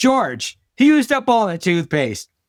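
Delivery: mock, high calling out, as through a closed door. A father retells his morning in the bathroom with no toothpaste: shouting through a closed door. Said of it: "So I shout through this closed door".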